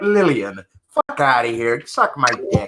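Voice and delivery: slow, drawn-out put-on English accent. Speaker tries a line in an English accent for the others. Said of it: "that's a better English accent".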